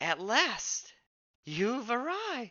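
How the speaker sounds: put-on old woman voice calling out high. Narrating a scene where a woman calls out to the arriving player, older woman's voice calling out. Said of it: "an older woman's voice calls out".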